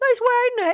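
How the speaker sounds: high, loud, strange UK accent, woman's voice.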